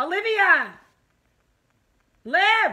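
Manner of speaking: high-pitched shouted yell calling out. Calling someone's name, then apologizing for yelling in the listener's ear: yelling. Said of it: "Sorry, I'm yelling in your ear".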